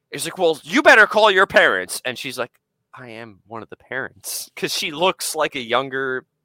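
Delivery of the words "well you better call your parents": very loud high swooping hollering. Retelling how a man shouted at a parent about the kids, imitating a man yelling. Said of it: "he was yelling at all the kids".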